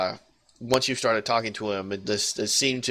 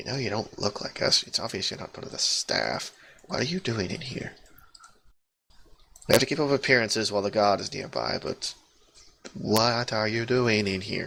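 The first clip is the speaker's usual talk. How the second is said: hushed, quiet voice. Narrating an elf who leans closer to the listener, speaking in a quiet voice. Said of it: "this elf leans a little bit closer to you and quietly says".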